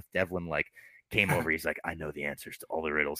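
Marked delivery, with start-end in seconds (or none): 1.8-3.2 low, hushed, soft masked caped-hero voice. Retelling what a visitor said while helping with riddles, in a Batman voice. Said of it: "He's doing a Batman voice".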